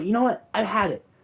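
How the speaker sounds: put-on, high-pitched voice. Retelling what she said to the teacher before running out, imitating her high voice. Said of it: "she has like this high ass voice".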